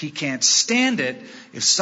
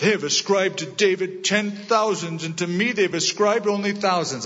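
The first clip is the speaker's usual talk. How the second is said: sulking, pouting tone; 4 semitones higher than usual. Quoting Saul's words about David in a pouty Saul voice. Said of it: "I have to do it in that pouty voice".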